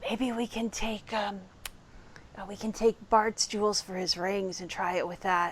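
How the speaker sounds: secretive, hushed half-whisper in character. Leaning in to another player's character and half-whispering in character. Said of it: "and I whisper".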